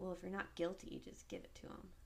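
hushed, rushed aside. Retelling what a man's wife said right after him, even quieter voice. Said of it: "in an even quieter voice".

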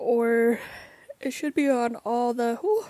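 words swallowed by a yawn while speaking. Recommending a music video to listeners, yawning midway. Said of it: "sorry about the yawn".

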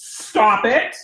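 stern, firm, scolding mother voice. Showing how her mom voice comes out, in a stern mom voice. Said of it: "My mom voice or my demon voice will come out. Okay. It's going to be like this".

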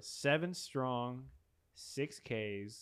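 slowed-down speech. Asked by another speaker to say it again but slower: slower delivery. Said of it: "Say it again, but slower".

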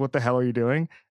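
ordinary delivery

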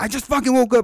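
acted-out irritated retort. Retelling an answer to a mother's phone call: imitating own angry reply. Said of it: "Like, I was mad".

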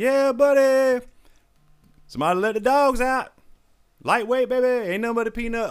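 mock, shrill, very high gym-bro hype screaming. Act out what a former officer yells in his videos, imitating a man screaming. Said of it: "he's screaming".

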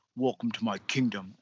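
dark, deep-voiced, low proclamation. Imagining a movie ending where he drinks from a skull: deep voice. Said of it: "in, like, a deep voice".

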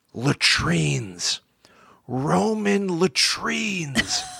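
secretive, confiding, conspiratorial stage whisper. Reading how a classicist called a researcher over in a library, as a conspiratorial half-whisper. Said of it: "he whispered conspiratorially".

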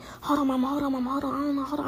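soft, urgent half-whisper under the breath. Retelling a phone call with mama during the shooting: imitating own half-whisper. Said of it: "I'm whispering".

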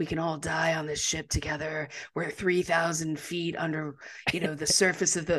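deliberately soft, hushed speaking voice. Describing a man filming himself, quoting his words: mimicking his soft voice. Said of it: "trying to talk in this really like soft voice".

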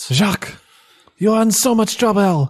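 put-on French-accented speech. Playing a mother scolding her runaway son jacques: french accent. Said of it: "it's the French accent".

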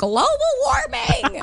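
high, drawn-out mock panic, freaking out.

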